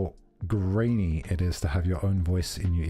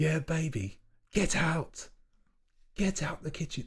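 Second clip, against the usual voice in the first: put-on angry chef voice, higher and quieter; 9 semitones higher, 5 dB quieter than usual. Doing an impression of Gordon Ramsay: Gordon Ramsay impression. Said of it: "This is my Gordon Ramsay impression".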